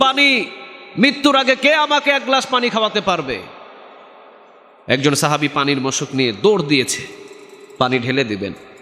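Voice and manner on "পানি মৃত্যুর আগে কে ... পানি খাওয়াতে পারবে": high-pitched pleading call. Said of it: "সাহাবী চিৎকার দিয়ে বলছেন".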